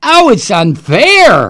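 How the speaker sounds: loud, slow, mocking scream.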